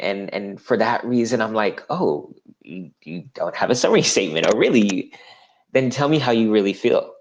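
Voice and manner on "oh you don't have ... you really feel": put-on sarcastic needling tone, sing-song and swooping. Speaker acting out their usual reaction to job seekers, retelling a sarcastic reply. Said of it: "I say that a bit sarcastically".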